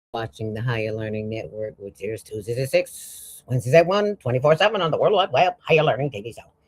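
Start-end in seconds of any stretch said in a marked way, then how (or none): 5.6-6.4 put-on robotic, machine-like delivery. Announcing the show's name, in a robot voice. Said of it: "That was my robot voice".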